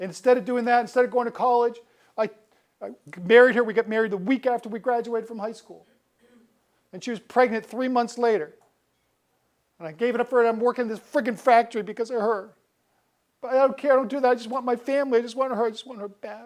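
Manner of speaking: play-acted very high, very loud tearful weeping. Retelling what a man said once he broke down, imitating a man in tears. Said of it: "he's in tears".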